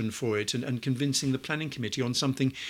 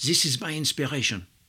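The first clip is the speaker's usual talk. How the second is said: put-on French accent; 3 dB louder than usual. Retelling how the building's designer showed his model, speaker quotes him in a french accent. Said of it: "excuse the French accent".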